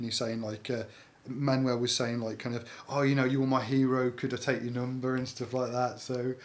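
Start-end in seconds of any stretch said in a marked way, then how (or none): none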